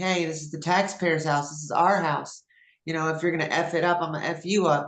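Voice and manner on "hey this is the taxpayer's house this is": ordinary delivery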